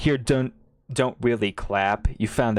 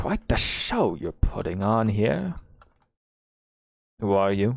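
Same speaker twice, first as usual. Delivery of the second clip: low-key, confiding aside; 2 semitones lower than usual. Narrator voicing a man who addresses you on the platform, hushed tone. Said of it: "it's not really a whisper, but more of a hushed tone".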